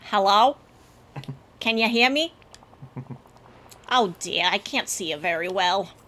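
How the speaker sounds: put-on attempted Boston accent. Two speakers who just agreed to do New England accents begin a scene: attempted Boston accent. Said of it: "I'm going to try to go for a Boston accent".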